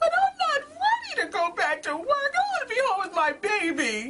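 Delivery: put-on very high, loud sobbing wail, baby drawn out. Retelling going back to work after having a baby: imitating own crying. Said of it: "I just bust out in tears".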